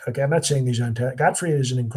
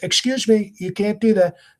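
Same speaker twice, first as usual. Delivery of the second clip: pitched-up, surface-level politician voice, from the throat; 8 semitones higher, 3 dB louder than usual. Showing what people usually think is a good Trump impression: common Trump impression. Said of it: "what people usually think is a good impre-".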